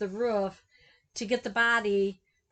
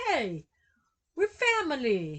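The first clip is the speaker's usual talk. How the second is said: terrible, bad fake Italian mobster accent, swooping; 5 semitones higher than usual. Retelling a story, quoting the mobster guy in a terrible Italian mobster impression. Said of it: "That's a terrible Italian impression".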